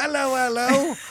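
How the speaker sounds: mock voice with British accent.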